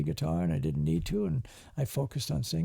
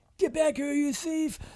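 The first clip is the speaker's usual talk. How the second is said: acted-out, very high, shrill yell; 10 semitones higher than usual. Retelling how the boss yelled at a fleeing thief: imitating boss yelling. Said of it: "he starts yelling at this guy".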